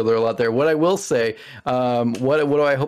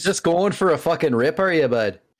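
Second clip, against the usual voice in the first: put-on Canadian hoser-style accent; 3 semitones higher than usual. After being called a real hoser, the speaker riffs in a mock Canadian accent. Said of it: "you're scary with that accent".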